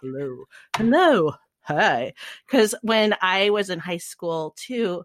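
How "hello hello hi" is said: dorky hello with pitch swooping up and down. Recalling the Reaper's dorky phone greeting: imitating Reaper's dorky hello voice. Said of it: "did his voice to say hello".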